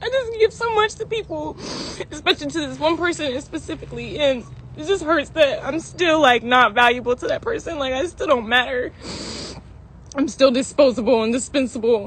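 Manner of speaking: very loud, tearful speech while crying. Speaking on a livestream about feeling hurt, crying while talking. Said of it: "I'm crying because I'm sad about it".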